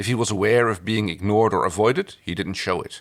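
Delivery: ordinary delivery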